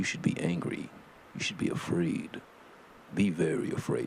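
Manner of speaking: hushed, whispered dramatic movie-trailer announcer voice. A show host doing a bit, in a commercial announcer voice. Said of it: "I should make a commercial with that voice".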